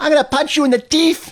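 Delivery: deliberately awful put-on celebrity voice, squeaky-high, saying teef. Showing how Mike Tyson says teeth: worst Mike Tyson impression. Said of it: "I do the worst Tyson".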